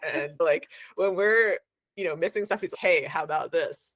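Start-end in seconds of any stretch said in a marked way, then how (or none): 2.8-3.9 put-on dry deadpan voice, much slower. Describing how he points out things they missed, imitating his dry voice. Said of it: "in the most dry voice".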